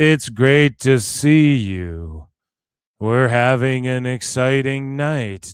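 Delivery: very slow, loud, utterly bored delivery. Mocking a host's dull video greeting: imitating Tony sounding bored. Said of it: "you sound fucking bored".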